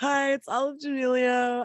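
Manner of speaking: high, very slow, drawn-out "hello", influencer-style voice. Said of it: "I think I got the voice down".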